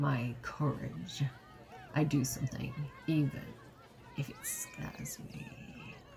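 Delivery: menacing, intimidating, slow, hushed threatening delivery. Acting out a character intimidating a shifty clown back, mock-threatening tone. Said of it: "it's almost a bit of a threat as well. Like he would say it like".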